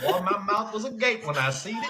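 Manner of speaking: put-on Southern US accent. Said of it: "why you sound like you live way down south".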